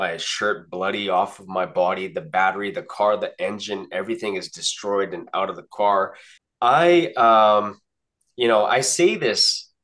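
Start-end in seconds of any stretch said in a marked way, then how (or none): none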